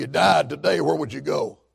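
very hushed, rough, creaky preacher voice. Retelling how an evangelist questioned a biker, imitating Carl Hatch. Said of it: "Old Carl talked like this".

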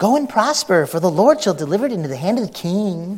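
mock heavy sarcastic tone with swooping pitch. Guessing the tone of a biblical line, acting sarcastic. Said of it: "it had to be something like this... Sarcasm, sarcasm".

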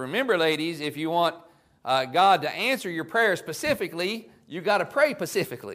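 put-on laid-on Tennessee accent.

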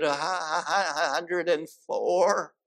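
put-on squeaky voice. Retelling how a man answered the funeral director, in a squeaky kind of voice. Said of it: "with a squeaky kind of voice".

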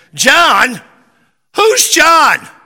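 put-on loud, high, swooping old man. Retelling an old man in church asking what was said: imitating a loud old man. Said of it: "And here's the old man".

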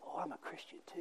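hushed, very quiet whisper. Retelling a hospital chat, the speaker acts out a nurse quietly replying. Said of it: "she quietly said".

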